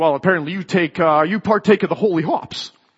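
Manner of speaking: heavily scornful, taunting put-on voice. Retelling a man's only response to the speaker's answer, imitating a mocking voice. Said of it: "in a very mocking voice".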